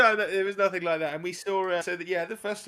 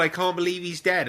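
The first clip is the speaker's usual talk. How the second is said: plain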